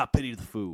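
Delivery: put-on robotic police officer voice. Quoting what RoboCop would say: RoboCop voice. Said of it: "as RoboCop would say".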